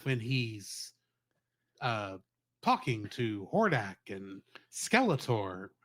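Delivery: slow, drawn-out delivery, each phrase stretched. Asking whether a character talks like this: William Shatner impression. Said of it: "Does he talk like this?".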